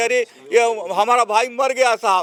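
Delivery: plain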